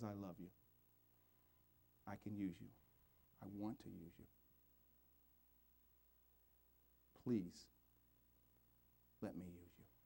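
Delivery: soft, small, tender, loving voice. Speaking to the congregation, the speaker voices the small voice in a put-on small, loving voice. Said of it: "Do you hear the small voice today? That loving voice?".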